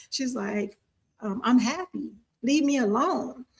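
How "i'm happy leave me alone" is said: put-on country accent. Retelling what a lady said to them, in a country accent. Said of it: "she just sounded really country".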